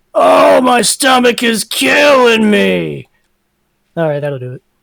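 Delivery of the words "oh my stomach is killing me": very loud, very slow projected call. Player character calls out toward the exit of the hole, projecting voice. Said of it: "to try to emphasize my voice".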